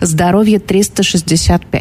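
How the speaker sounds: ordinary talk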